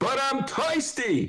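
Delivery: put-on high-pitched old man barbershop regular voice. Doing his film-character imitation again on request: Eddie Murphy old man impression. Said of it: "Want to hear it again".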